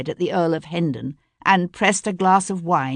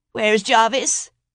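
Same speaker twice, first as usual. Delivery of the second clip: peevish, petulant whine, higher pitch; 5 semitones higher than usual. A prince calls out for his attendant jarvis in a peevish whine. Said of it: "The prince's voice rose in a peevish whine".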